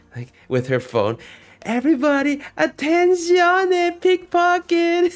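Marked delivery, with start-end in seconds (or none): 1.7-5.2 put-on, imitated scream of a woman. Retelling how a woman warns tourists about pickpockets: imitating a woman screaming. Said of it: "screams at the top of her lungs".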